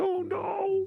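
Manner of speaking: very high, soft, trembling, quivering little voice. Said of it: "Quivering Tukey voice".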